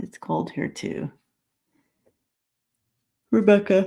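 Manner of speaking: speaking through a yawn. Host greeting viewers at the start of a live session, yawning. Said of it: "Sorry, I'm yawning".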